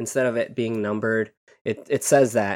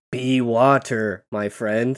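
caveman-style speech. Speaker tries out a joke line the way a caveman would say it, caveman voice. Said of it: "But how would a caveman say that?".

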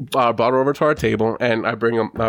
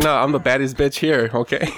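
ordinary talk, nothing marked

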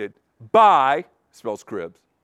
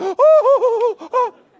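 mock crying, very high, loud sobbing wail. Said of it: "There's some just crying, going".

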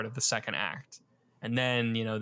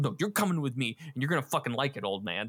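mock frantic, unhinged, crazed and desperate; 3 semitones higher than usual. Retelling a film scene, imitating a crazed desperate man dragging someone off. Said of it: "he's so crazed at this point".

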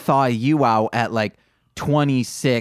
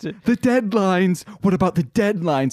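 theatrical, dramatic podcast-host voice, pitched up; 6 semitones higher than usual. Recalling James repeating a phrase during a movie, imitating James's podcast voice. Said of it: "he kept saying it like that too".

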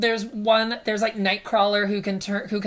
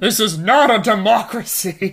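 loud, raised, growling voice; 5 dB louder than usual. Narrator reading Professor Y's line in the story, as Professor Y growling. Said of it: "Professor Y growls".

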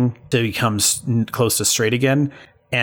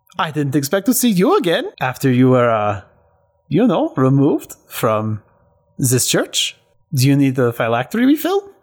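put-on male voice with swooping Swedish accent; 3 semitones higher than usual. Game narrator voices the guy in the vault greeting a player: Swedish accent. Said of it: "the Swedish accented guy standing in the vault and saying".

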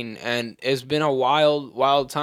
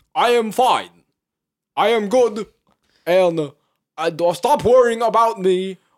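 put-on high-pitched old man voice, preachy delivery. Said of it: "That's Bernie".

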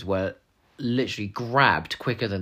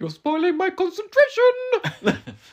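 shrill, loud, very high, squeaky voice; 5 dB louder than usual. Quoting what a man says in a scene: imitating his squeaky voice. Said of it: "when he goes in that sort of squeaky voice".

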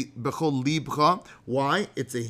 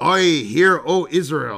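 attempted Irish accent, pirate-like, loud and slow; 7 dB louder than usual. Joking that they never became Irish, a pirate-sounding put-on accent. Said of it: "That's more pirate".

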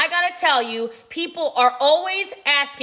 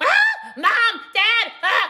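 acted very high, swooping, very drawn-out child's wail; 5 semitones higher than usual. Retelling a kid hit in the head calling for parents: imitating a kid screaming. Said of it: "The kid's screaming".

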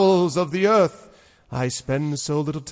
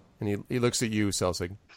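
ordinary talk, nothing marked

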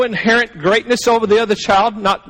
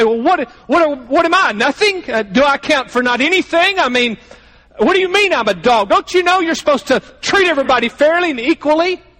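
heavy put-on sarcasm, very sarcastic; 4 semitones higher than usual. Speaker imagining how a woman would answer Jesus today: mock-sarcastic retort. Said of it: "she would very sarcastically say".

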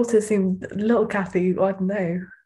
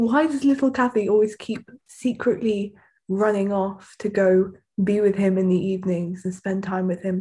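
ordinary delivery

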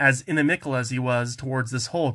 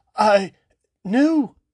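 anxious, troubled, worried, with raised voice; 8 semitones higher, 6 dB louder than usual. Questioned by a suspicious archon, a family member answers; concerned.

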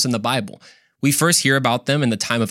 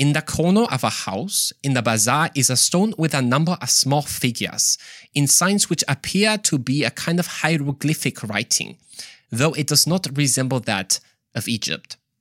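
attempted Swiss German accent. Reading aloud a Swiss writer's quoted passage, attempted Swiss German accent. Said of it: "Like it's like a German accent".

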